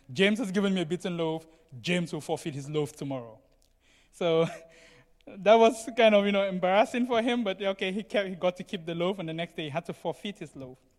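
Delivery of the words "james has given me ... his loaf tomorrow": ordinary talk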